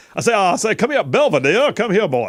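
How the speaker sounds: loud, high-pitched, swooping cartoon-style holler. Repeating the bit for another speaker: Foghorn Leghorn voice. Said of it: "Foghorn Leghorn boy".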